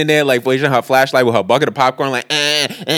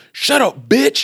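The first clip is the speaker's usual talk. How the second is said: put-on yell, much higher; 11 semitones higher than usual. Recounting an argument where the big guy yells at the girls, retelling a yell. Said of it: "So they start yelling".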